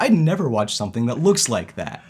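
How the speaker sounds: forceful, aggressive, blunt, unhesitating. Retelling what Sam said on seeing an anime clip: imitating Sam, mock-aggressive.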